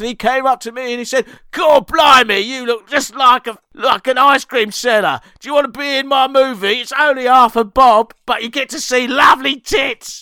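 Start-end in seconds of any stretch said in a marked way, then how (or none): 1.5-10.2 put-on very thick, broad, laid-on Cockney accent. Quoting a poor boy done good who came up to you, in a very thick Cockney accent. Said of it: "he had a very thick Cockney accent".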